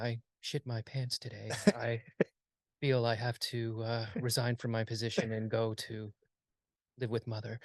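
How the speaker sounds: play-acted, very deadpan, low, flat actor delivery. Speaker mocks a film's story with an imagined line, imitating a deadpan actor. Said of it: "Like an actor very deadpan going".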